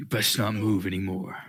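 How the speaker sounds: distorted metallic villain voice. Voicing an armored knight warning the players: General Grievous voice. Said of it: "in a General Grievous voice".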